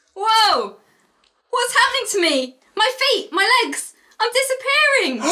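shrill, very high screaming cry. Narrator reading a story, voicing a character who is disappearing, screaming. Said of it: "screams Abby".

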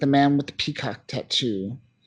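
ordinary talk

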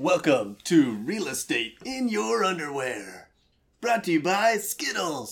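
big TV sports announcer voice, swooping high pitch. Opening a podcast episode as a joke: SportsCenter announcer voice. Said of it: "I always wanted to be the SportsCenter voice guy".

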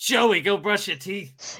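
put-on heavy New York accent. Retelling what Jen says to Joey, in a thick New York accent. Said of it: "like a thick New York accent".

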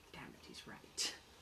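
barely audible, very faint whisper. Voicing a character who quietly admits another is right: very faint voice. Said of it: "you just hear a very faint".

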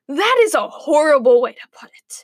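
sharp, snapped delivery. Mother replies to Grandma's complaint; snapped. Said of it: "snapped Mother".

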